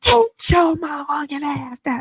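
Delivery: mock booming, thunderous shout, pitched high. Retelling shouting at a pit bull that hopped the fence, retelling a thunderous shout. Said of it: "But my voice was like thunder".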